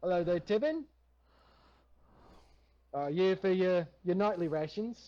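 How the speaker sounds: put-on New Zealand accent, slipping in and out. Playing the character Sander greeting Tibbin, in Sander's New Zealand accent. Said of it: "I can't hold the N- New Zealand voice".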